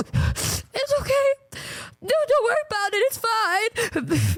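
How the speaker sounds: very high, slow, tearful crying voice. Retelling answering the lobby lady through tears: imitating own tearful words. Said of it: "through my tears".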